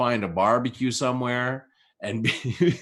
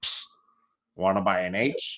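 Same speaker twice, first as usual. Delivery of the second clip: low little blue puppet voice; 4 semitones lower than usual. Retelling a Sesame Street bit: imitating the little blue Sesame Street dude. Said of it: "When the little blue dude would come up and be like".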